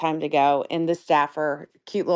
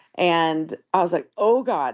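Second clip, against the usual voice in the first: plain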